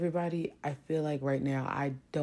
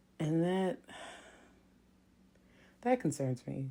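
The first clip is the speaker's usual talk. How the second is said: sounding sad and downcast; 2 semitones higher than usual. Telling listeners about a hard couple of weeks: sad. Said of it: "Sorry if I sound sad today".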